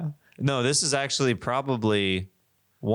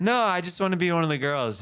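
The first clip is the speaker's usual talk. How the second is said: put-on girly-girl voice, higher; 8 semitones higher than usual. Mocking a line as an impression of a girl new to girls: impression of a girl new to girls. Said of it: "an impression of a girl who has not hung out".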